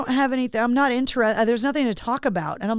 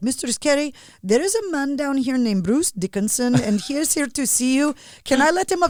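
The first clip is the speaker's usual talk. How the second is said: badly done put-on Pakistani accent. Retelling a call from the security guard Ash, imitating his accent badly. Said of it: "I'm gonna do the accent really badly".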